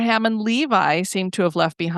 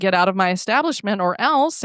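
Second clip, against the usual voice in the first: ordinary talk, nothing marked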